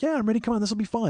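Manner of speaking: very high, chipper, eager and ready. Retelling Rich's answer before going up a steep hill, imitating Rich sounding chipper. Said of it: "He's like real chipper and ready".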